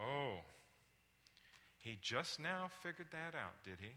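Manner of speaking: loud, condescending, belittling, talking-down sarcasm. Showing examples of the things they say to people: belittling. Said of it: "How about when I belittle someone?".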